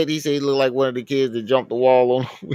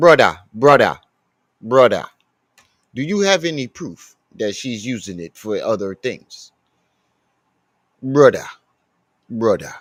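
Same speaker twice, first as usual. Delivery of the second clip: put-on Jamaican accent on "brother, brother", repeated; 3 semitones lower than usual. Imitating how Sigma used to talk: imitating Sigma's Jamaican accent. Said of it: "That's how Sigma used to say it".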